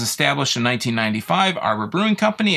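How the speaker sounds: ordinary delivery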